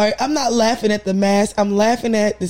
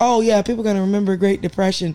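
usual speaking voice

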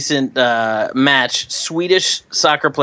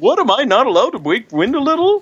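very high-pitched put-on Swedish accent; 9 semitones higher than usual. Reading aloud the ejected player's quoted reply, asked to do the Swedish Chef voice. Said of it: "you do the Swedish chef".

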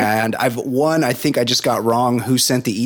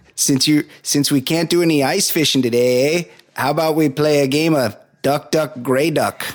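mock Canadian accent, higher pitch; 3 semitones higher than usual. Acting out a Minnesota teacher at indoor recess: put-on Canadian guy voice. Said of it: "that's my Canadian guy".

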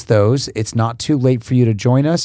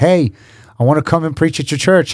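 put-on terrible, clumsy British accent, pitched up; 5 semitones higher than usual. Retelling a british preacher's phone call: terrible british accent. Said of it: "It's a terrible accent".

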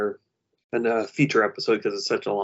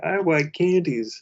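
put-on high, childlike, pitched-up small kid voice. Describing a cartoon in which he does the kids' voices: Homestar kid voice. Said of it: "he's doing the voices of the kids".

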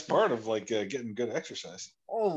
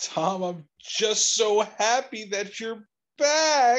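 sarcastic, mock sincere tone; 9 semitones higher, 5 dB louder than usual. Answering a request to say something witty, sarcastic. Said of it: "You said witty, not sarcastic".

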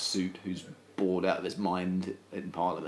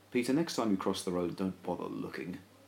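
usual speaking voice

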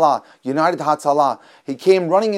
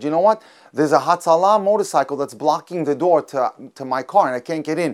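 ordinary delivery

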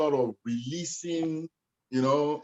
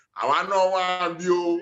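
put-on speaks with Yoruba accent; 4 semitones higher, 3 dB louder than usual. Recalling dancing, the speaker imitates a voice they hear, in a Yoruba accent. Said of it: "you just hear that Yoruba voice say".

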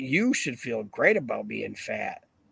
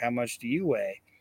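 normal talking voice

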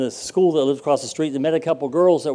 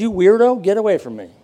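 put-on mild Kentucky accent, slightly raised voice; 4 semitones higher, 5 dB louder than usual. As the woman answering a man who just met her and proposed, in a little Kentucky accent. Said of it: "in her little Kentucky accent".

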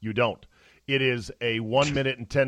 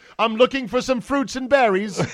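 high, loud put-on English accent; 12 semitones higher, 6 dB louder than usual. Improvising a talking Bigfoot, Bigfoot with an English accent. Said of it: "What if the Bigfoot could talk and he had an English accent?".

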